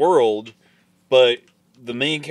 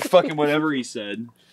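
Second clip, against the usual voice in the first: plain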